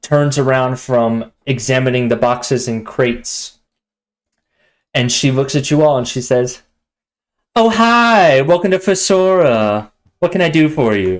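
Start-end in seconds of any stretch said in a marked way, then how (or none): 7.6-11.2 bombastic, over-the-top feminine voice, high and swooping. Game master voices a shopkeeper greeting the players, bombastic feminine character voice. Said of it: "a very bombastic feminine character".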